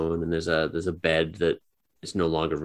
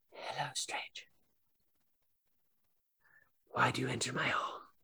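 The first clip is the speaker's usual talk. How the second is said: eerie, ghostly, very hushed whisper; 8 semitones higher, 10 dB quieter than usual. A hidden voice greets an intruding player in their ear, whisper. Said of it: "You feel a whisper in your ear".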